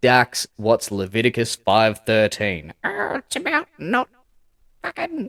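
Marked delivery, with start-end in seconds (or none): 2.8-5.3 put-on, very high-pitched ai assistant voice. Answering own question about a Bible verse, imitating Dax's voice. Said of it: "why am I even doing that voice".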